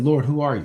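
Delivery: normal talking voice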